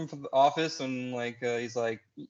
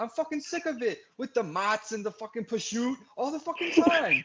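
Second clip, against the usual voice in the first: fed-up, exasperated rant, pitched very high; 10 semitones higher than usual. Retelling a Sopranos scene where Chris storms in: Chris Moltisanti impression. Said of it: "that was a great impression".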